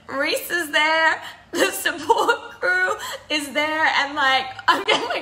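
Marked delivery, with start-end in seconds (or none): 0.1-3.8 mock tearful voice, welling up with emotion. Recounting reaching the checkpoint where the support crew waited, crying, getting emotional. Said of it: "I don't know why I'm crying".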